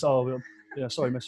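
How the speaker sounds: put-on nervous, jittery boy voice. Retelling how a woman screamed at a boy, imitating nervous Fred. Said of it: "he's nervous".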